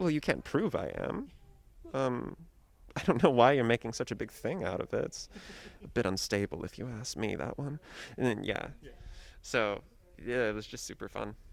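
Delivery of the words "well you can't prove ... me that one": mock courteous, backhanded tone with swooping sing-song. Speaker acts out the character Kaminsky, acting Kaminsky's polite insult. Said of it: "In a polite manner".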